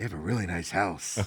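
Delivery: soft, low, hushed voice. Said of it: "We keep our voices down at the Hillestrays".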